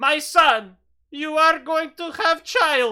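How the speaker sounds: put-on very loud, belted, high-pitched Romanian accent. Narrating a scene and speaking as Mother Fizzlewitz, Mother Fizzlewitz Romanian accent. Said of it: "what's a Romanian accent?".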